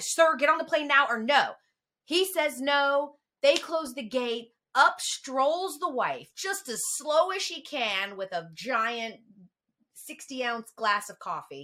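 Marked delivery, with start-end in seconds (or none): 0.0-1.5 loud, panicked, urgent, frantic delivery. Retelling a story at an airport gate, the staffer tells the father to board, imitating her freaking out. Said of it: "She's freaking out".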